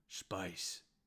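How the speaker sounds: gruff grunting. Voicing a half ogre who looks at the player: grunting. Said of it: "the half ogre looks at you and grunts".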